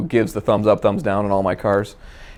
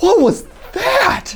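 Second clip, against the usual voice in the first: put-on very high, small little-kid voice. Imitating the speaker's son reacting in the car, in a child's voice. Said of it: "I'll do my impression of my son".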